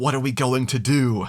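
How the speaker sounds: whispered voice. Retelling a film scene where one pirate whispers to another: imitating Gibbs whispering. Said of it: "he whispers".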